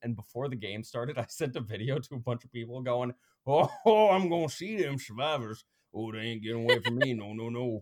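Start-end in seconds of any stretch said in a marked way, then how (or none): 3.5-7.8 thick, loud, put-on Cajun accent. Retelling a video sent before the game, speaking as their character: Cajun accent. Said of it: "Cajun accent".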